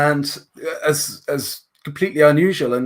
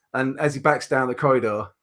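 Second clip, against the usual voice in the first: plain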